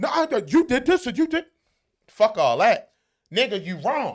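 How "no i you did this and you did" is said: whiny voice, high-pitched and loud. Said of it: "they got an excuse".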